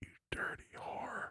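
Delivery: whispering. Acting out a line said while grabbing a partner's neck: whispering. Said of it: "I whisper in your ear and I'm like".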